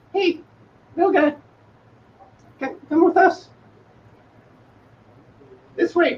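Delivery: very high, soft, hushed pixie murmur. An unseen figure speaks from just behind the player's character; hushed, high-pitched voice. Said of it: "a hushed but kind of high-pitched voice".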